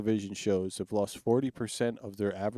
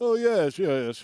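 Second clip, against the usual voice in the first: put-on royal accent, pitched up and loud; 9 semitones higher, 5 dB louder than usual. Asked how he talks, show the other speaker with a put-on royal accent. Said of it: "What's he talk like?".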